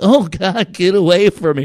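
mock-frightened pleading. Describing girls on a TV show, the speaker imitates them in a put-on scared plea. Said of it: "they're like".

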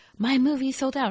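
high, irate, complaining yell. Retelling women at a sold-out movie theater: imitating women yelling. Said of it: "ten women who are all yelling at you".

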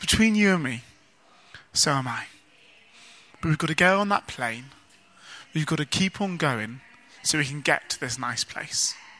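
tender, gentle, low, soft fatherly tone. Telling a story of a father reassuring his scared son, acting out a father's gentle voice. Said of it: "in a gentle voice".

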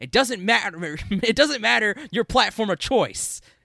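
aggressive, shrill, full-volume shout, pitched way up. Retelling how the event host introduced the show: imitating Jeff Keighley yelling. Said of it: "he yells".

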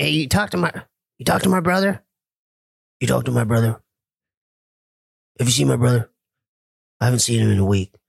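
rough, gruff, grizzled voice with gritty edge. Showing how the brother sounds asking about his sibling: imitating brother. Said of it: "What does he sound like?".

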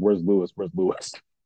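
usual speaking voice

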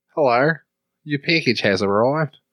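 Australian accent, smart-speaker lady assistant announcement voice. Friends talk about changing voice assistant settings; one imitates it: Australian Alexa voice. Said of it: "Australian lady".

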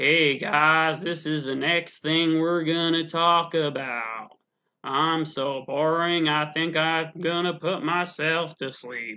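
dull, droning, flat southern drawl with no spark. Mocking a boring man's southern accent and cadence: imitating a boring southern drawl. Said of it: "with his southern accent, cadence, and just".

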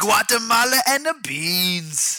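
bad fake Haitian accent. In a compilation of fake Haitian accents, a performer answers in fake Haitian accent. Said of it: "the best of the fake Haitian accents".

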